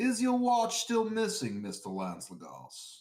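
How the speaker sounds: put-on loud, swooping, drawling southern accent. Reading a friend's text message aloud on request: southern drawl. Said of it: "Read it in your southern drawl".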